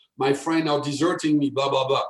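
plain

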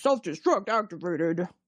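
irate, angry male automated computer voice. Recalling the season-one auto-destruct announcement, imitating an angry male computer voice. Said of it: "angry male computer voice".

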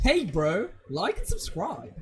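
put-on, heavily exaggerated, sing-song surfer dude voice.

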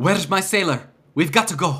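out-of-breath huffing. After a hard fight, a character calls for her sailor, huffing and puffing. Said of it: "she's like huffing and puffing".

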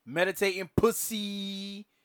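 slow, high, loud, drawn-out mocking tone.

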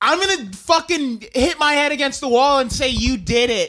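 put-on, imitated arguing voice. Retelling a recorded argument, quoting her threat: imitating someone arguing. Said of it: "recordings of her and Johnny Depp arguing".

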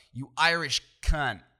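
very loud, put-on American accent. Speaker contrasts how an insult sounds in Australian and American accents, put-on American accent. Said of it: "in the american accent sounds way worse".

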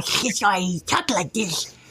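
toothy shark creature voice spoken through teeth. A puppeteer recalls voicing a shark-headed bounty hunter: shark bounty hunter voice. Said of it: "I was making him talk like this because he had a shark head".

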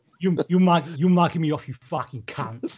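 put-on gangster accent. After the other speaker mentions binging the show, Peaky Blinders accent. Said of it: "That's how they talk".

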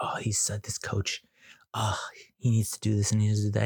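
whispering, imitated. The speaker retells a woman whispering to them about the coach, retelling a whisper. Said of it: "she's whispering".

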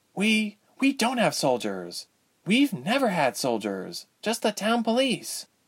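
frightened stage whisper, very high pitch. Reading a story, the narrator voices a character replying to her companion: loud whisper. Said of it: "Ilse whispered loudly".

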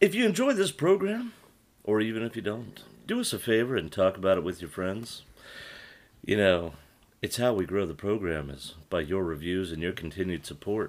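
smooth-as-butter, silky voice. Host asking listeners to share the program and leave reviews, butter-smooth voice. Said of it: "I'm trying to make my voice like butter smooth".

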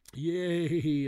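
very loud, high, long drawn-out "yay". The boys react when the monster agrees to keep the little dragon, cheering. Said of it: "all the boys cheered".

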